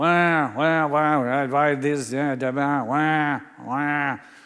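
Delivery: very slow, loud, silly little cartoon voice. Recalling what your friend would start doing when you first met him, do Paul Birch's funny little voice. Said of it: "this funny little voice that he'd do".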